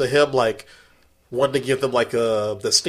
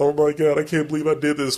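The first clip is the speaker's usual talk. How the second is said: put-on tearful crying voice; 2 semitones higher than usual. Retelling a movie scene where a character sits in a field: imitating a character crying. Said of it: "crying, like".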